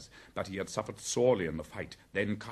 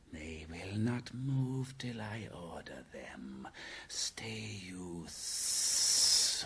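soft, slow, hissing snake voice; 2 semitones lower, 6 dB quieter than usual. Answering a companion who wants to leave, the rescuer speaks: hissing. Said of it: "Kaa hissed".

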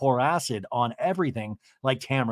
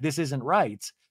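ordinary talk

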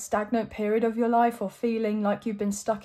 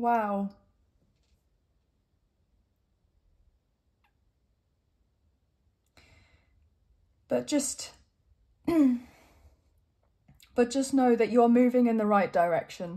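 choked-up, emotional voice catching with feeling. Giving a reading to the viewers and encouraging them, getting choked up. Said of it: "I'm getting a bit choked up".

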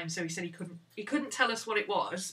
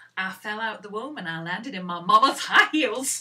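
put-on loud, laid-on-thick Southern accent; 2 semitones higher, 11 dB louder than usual. Quoting a comedian's joke, imitating Leslie Jordan's Southern accent. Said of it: "I can't do his accent justice".

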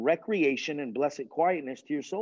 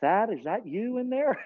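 put-on higher Canadian accent; 7 semitones higher than usual. Retelling the pastor asking who is in the closet, imitating Pastor Dave's Canadian accent. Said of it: "he had like this Canadian accent".

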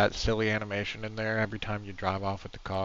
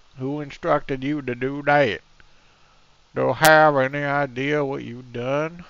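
silly, stupid-sounding fake voice, pitched higher; 5 semitones higher, 9 dB louder than usual. Reacting after the fleshy growth is gone, stupid put-on voice. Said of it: "I'm sorry that I'm doing this stupid voice".

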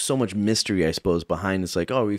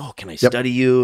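put-on, very surprised tone; 4 semitones higher, 6 dB louder than usual. Describing how people in other places reacted to them, imitating someone very surprised. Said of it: "very surprised and like very much like".

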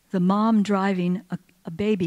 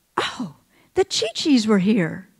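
put-on little two-year-old baby voice, sing-song. Retelling what a carried two-year-old boy said: tiny baby toddler voice. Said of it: "in a tiny little baby 2-year-old voice".

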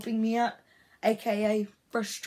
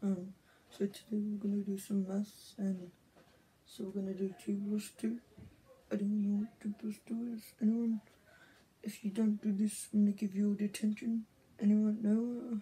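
slow, soft mumbling voice, much quieter; 6 dB quieter than usual. Skit playing a teacher doing maths with the class, in a slow soft mumbling voice. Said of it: "the really slow or like soft voice".

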